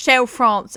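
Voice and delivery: very British pronunciation. Saying the product name again after denying being French: very British pronunciation. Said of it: "She says in the most British accent".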